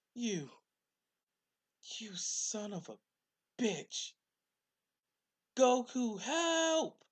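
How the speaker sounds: very high, tearful, furious weeping, words stretched. Narrating a story, voicing Bulma as she faces Pilaf, angry and crying. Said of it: "crying and looking at Pilaf with hate".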